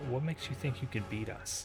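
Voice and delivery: whispered. A game narrator voices a woman just behind the listener's ear, whispering. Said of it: "and whispering just behind your ear".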